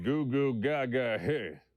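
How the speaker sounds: swaggering cowboy voice. Hearing a mean tweet in the head: stupid cocky McCree voice. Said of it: "in this stupid, cocky McCree voice".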